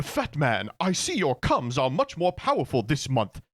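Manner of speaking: put-on swooping pitch, posh British accent. Mocking TikTok clips that use AI cartoon voices, in a Stewie Griffin AI voice. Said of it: "Stewie Griffin A I voices be like".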